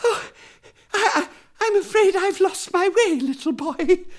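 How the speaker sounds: breathless, out of breath, very high. An old lady who has lost her way stops a boy in the wood, breathless. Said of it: "she said breathlessly".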